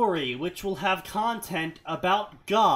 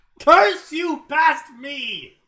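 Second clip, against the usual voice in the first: booming, full-volume, drawn-out high yell; 7 semitones higher, 9 dB louder than usual. Exclaiming at past self for picking this story: yelling. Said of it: "Why are you yelling at past you?".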